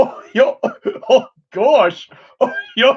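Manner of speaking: high, goofy, silly cartoon dog voice. Showing off impressions of TV characters, the speaker does a Goofy voice. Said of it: "I can do Goofy".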